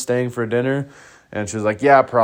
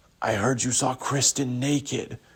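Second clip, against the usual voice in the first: put-on whisper, higher and quieter; 3 semitones higher, 6 dB quieter than usual. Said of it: "whispered to me".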